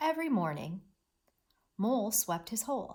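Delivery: brief pause held after "morning". Reading a Mouse and Mole story aloud: pause after morning. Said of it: "did you notice how I paused right here at the comma?".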